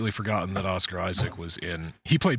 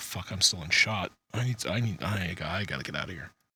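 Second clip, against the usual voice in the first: dog voice, quieter; 4 dB quieter than usual. Mocking a video, voicing the dog realizing it is on camera: voicing the dog caught on camera. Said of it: "He's like".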